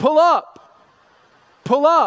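high, loud, called-out English accent.

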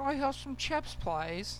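British accent. Joking about what the english call fries, ask for chips in a british accent. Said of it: "Is that your British accent?".

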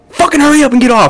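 very high-pitched, shrill yell. Storyteller acting out a woman yelling at a man, retelling a yell. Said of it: "She's like yelling at him".

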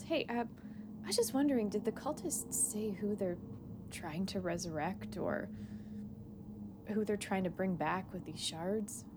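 quiet voice, brought down. In a tabletop game, a player's character pulls a companion aside: lowered voice. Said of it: "she kind of lowers her voice and just says".

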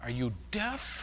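very quiet, flustered mumble to oneself. Retelling what a flustered man said to a woman, mumbling to himself. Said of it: "he mumbles to himself".

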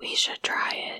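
creepy whisper. Talking with someone about astral projecting: creepy whisper. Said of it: "I don't know why I'm whispering creepy".

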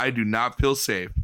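fake flat deadpan. Retelling how he answered straight to the camera, mock-deadpan Phil impression. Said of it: "just deadpans to the camera and just goes".

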